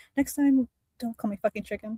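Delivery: close, hushed, secret whisper into an ear. Voicing a character who leans in close: whispering in their ear. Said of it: "whisper in ... their ear and be like".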